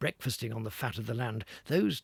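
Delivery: ordinary delivery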